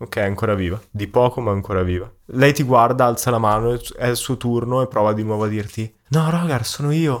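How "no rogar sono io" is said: slow, pleading, begging put-on borrowed voice. Voicing a creature that speaks to Rogar: Sara's voice. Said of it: "con la voce di Sara".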